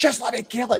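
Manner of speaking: very high, frantic panicked shriek, acted out. Recounting chasing something around the living room, retelling a frantic scream. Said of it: "But I'm like screaming".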